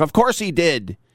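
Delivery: indignant, almost furious voice. Retelling a comedian's reaction to a question about a pick six: imitating Godfrey getting furious. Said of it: "just getting almost furious".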